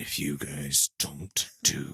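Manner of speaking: low, deep growl. A dad retells warning his kids, using his Batman growl. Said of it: "my Batman growl".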